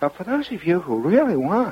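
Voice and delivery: thin, small, high-pitched announcer voice. Imitating a radio announcer who bugs the speaker, in a little high voice. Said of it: "he's got this little high voice".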